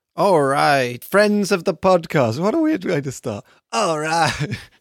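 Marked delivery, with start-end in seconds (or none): 0.2-2.4 radio DJ on-air announcer voice. Podcast host opens the episode, in a radio DJ voice. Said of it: "Like I'm a radio DJ".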